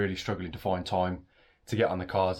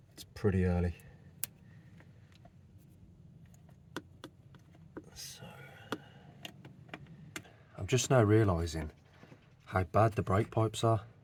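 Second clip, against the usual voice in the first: talking quietly, hushed. Early in the morning, working on a car's brake pipes, the speaker is talking quietly. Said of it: "I'm talking quietly".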